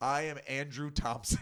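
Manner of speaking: put-on very stern voice. Retelling what a scammer's boss said on the phone: imitating a very stern voice. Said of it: "he goes like".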